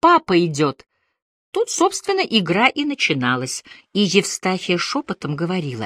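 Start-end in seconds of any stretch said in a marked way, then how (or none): 0.0-0.9 delighted exclamation, louder. A son sees his father appear from the dark doorway; delighted exclamation. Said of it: "восхищенно заявлял".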